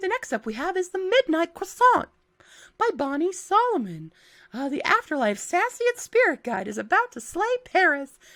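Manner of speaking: high, grating, irritating cartoonish squeaky voice. Introducing the next book on your reading list, annoying-sounding voice. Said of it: "This voice is going to get really annoying".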